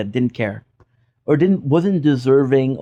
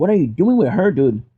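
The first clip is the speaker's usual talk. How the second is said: put-on, pissed-off screaming voice; 3 semitones higher than usual. Retelling how a pissed-off guy kept screaming at him, imitating someone screaming. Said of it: "he kept on screaming like".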